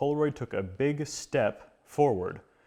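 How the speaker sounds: "step" stressed with slow delivery.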